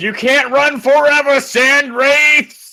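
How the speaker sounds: very high, drawn-out shout. Playing a character in a role-play, calling after fleeing enemies, shouting after them. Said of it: "I just shout after him like".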